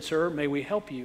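firm, stern but courteous tone. Retelling the guards coming out to the car: imitating a stern but kind guard. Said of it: "very stern but very kind".

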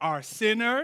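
very slow, drawn out, each word stretched and separate. Repeating a point one more time for listeners, speaking very slowly. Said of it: "I'm doing it real slow".

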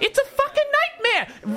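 very high-pitched squealing outburst. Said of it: "cursing in my high-pitched voice".

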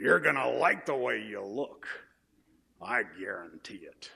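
rough, very low, gravelly voice. Quoting an oldish man's line from an ad, gravelly voice. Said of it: "says in this gravelly voice".

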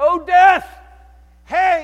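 bold, loud, high-pitched cry.

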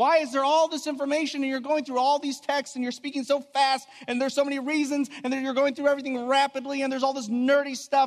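high, fast, complaining voice. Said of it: "no one can say to me".

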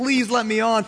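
bawling, pleading voice. Acting out an imagined stranded passenger begging to board: crying and begging. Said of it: "she's bawling, crying".

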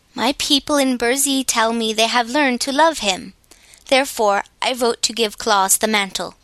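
usual speaking voice

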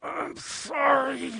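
very high, drawn-out grudging sorry through clenched teeth. Recalling a two-year-old's first apology he had to say, imitating a sorry through clenched teeth. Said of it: "through clenched teeth".

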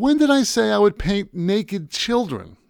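disbelieving tone. The narrator challenges Jerry's suggestion about the painting job, incredulous. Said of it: "I asked incredulously".

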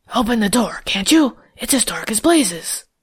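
husky, hoarse half-whisper with almost no voice. Reading a man's voice calling to open a door in the dark: hoarse half-whisper. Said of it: "saying in a kind of hoarse whisper".

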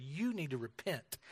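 mock-angry through gritted teeth. Retelling words said to a woman while people could hear, angry through gritted teeth. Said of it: "said it through my teeth, and I sounded really angry".

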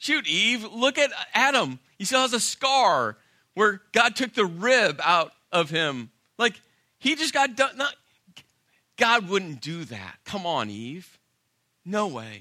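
needling, serpent-like, loud, swooping sarcastic taunting tone. Speaker retelling Genesis voices the serpent talking to Eve, sarcastic serpent. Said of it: "can you just hear kind of the sarcasm in his voice".

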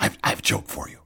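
fast, hushed, conspiratorial whisper. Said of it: "very conspiratorial".

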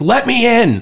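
high, loud, angry yell. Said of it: "were yelling at us".

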